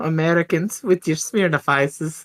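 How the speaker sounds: put-on German accent, voice pitched very high. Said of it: "you definitely don't say that in a German accent".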